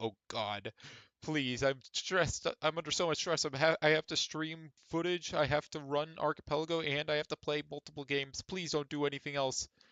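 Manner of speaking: stressed, pleading put-on computer voice. Imagining what the computer CPU would say: pretend stressed CPU voice. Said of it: "my computer C P U is like".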